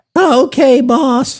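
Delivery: put-on high, odd teenage voice. Acting out a teen worker told to clean a theater: voice of the pimply Simpsons teen. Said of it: "I don't know why he sounds like that".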